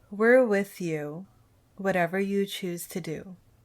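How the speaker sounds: grave, very serious, sincere, earnest tone. [name] puts a hand on Jem's shoulder and speaks to her: very serious voice. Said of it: "in a very serious voice says".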